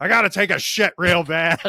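very high, blaring shout. Retelling yelling back to a buddy across a hotel lobby: retelling a yell. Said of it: "i yelled across the hotel lobby".

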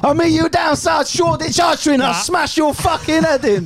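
very high, bad put-on London accent. Asked to imitate a West Ham firm member, in a bad West Ham hooligan accent. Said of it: "But in a worse accent than that".

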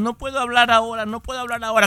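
play-acted weepy voice through tears, crying. Retelling a lottery winner's words to the press, imitating someone crying. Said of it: "Y sigue llorando".

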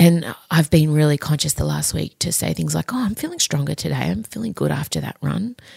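hushed whispering. A mother talking about her body while her daughters are home, whispering. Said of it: "I just got to whisper because they're home".

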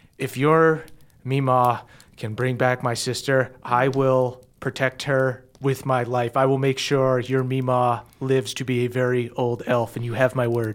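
grave, deadly serious, utterly sincere and earnest. Game master voicing a character speaking to the player Moonshine, very serious. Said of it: "she looks at you so seriously".

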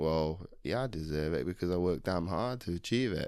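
ordinary talk, nothing marked

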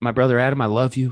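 very serious, grave, dramatic, solemn delivery. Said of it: "It's very serious".

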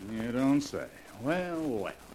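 flat, dry, unenthusiastic, unimpressed mock surprise. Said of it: "you don't sound very enthusiastic".

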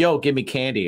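ordinary delivery

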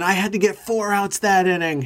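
put-on high, screaming complaint tone. Retelling a pitcher yelling at umpires over a botched call: imitating Josh Beckett screaming. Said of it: "He'd be screaming".

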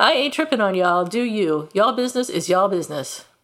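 ordinary talk

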